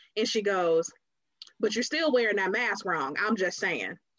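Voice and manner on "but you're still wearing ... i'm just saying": mock blunt, pointed, cutting tone. Retelling a remark from a stranger that broke the room's silence: imitating a loud, cutting remark. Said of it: "broke through like a sledgehammer".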